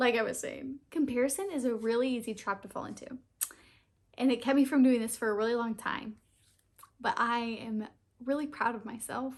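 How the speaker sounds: choked-up, tearful voice, crying through the words. A YouTuber tearing up on camera while talking to viewers, crying. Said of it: "I can't believe I'm crying".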